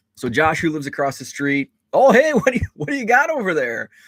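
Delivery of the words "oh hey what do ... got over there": put-on very high, small-town Wisconsin accent. Retelling what the small-town neighbor across the street asked, in Josh's thick Wisconsin accent. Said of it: "He does have kind of a thick Wisconsin accent".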